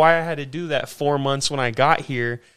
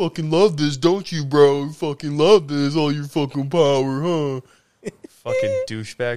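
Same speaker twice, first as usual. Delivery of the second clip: spiteful, mean, goading, jeering tone. Retelling what you said to him back then, retelling mean taunts. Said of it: "I was all mean to him".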